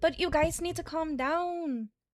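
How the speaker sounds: put-on soft, very light Spanish accent. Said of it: "this is how she's talking".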